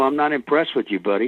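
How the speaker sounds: put-on scolding father voice. Retelling how a scene partner acted toward him: imitating Joaquin Phoenix as a scolding father. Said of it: "a father kinda, like, letting you know".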